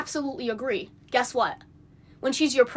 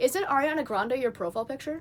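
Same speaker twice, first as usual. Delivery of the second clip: very calm, relaxed, unruffled soft voice; 5 dB quieter than usual. Recounting a question they put to someone, retelling a very calm voice. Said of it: "In a very calm voice".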